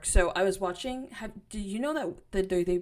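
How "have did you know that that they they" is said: stuttering, tripping over words, quieter. Speaker starts asking the other speaker about some news, stuttering. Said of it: "I'm stuttering so bad".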